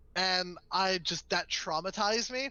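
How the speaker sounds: ordinary talk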